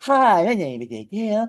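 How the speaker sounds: slow, cute, cuddly little cartoon bear voice. Imitating a coworker's voice: imitating a little bear voice. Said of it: "like a little bear".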